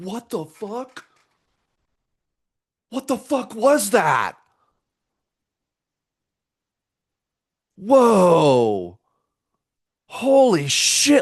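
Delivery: play-acted astonished outburst, swooping high, whoa stretched long. Retelling own reaction to hearing another voice: reenacting own astonished reaction. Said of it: "I was so blown away by it".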